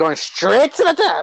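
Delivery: high, hammed-up delivery. Talking about a wrestler with another speaker: Cameron Grimes impression. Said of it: "doing a Cameron Grimes impression".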